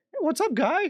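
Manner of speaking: put-on cartoon mouse voice, way up high. Retelling a video of a guy doing voices: imitating a Mickey Mouse voice. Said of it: "the guy that does, like, the Mickey Mouse voices".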